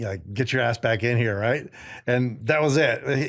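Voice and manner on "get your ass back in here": imitated yelling. Retelling a drill sergeant ordering him back inside: imitating someone yelling. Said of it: "He's yelling at me again".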